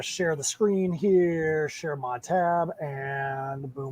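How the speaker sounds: very Southern accent, slow, words drawn out. Sharing the screen before playing a video: Southern accent. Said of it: "very, very Southern when I just said that".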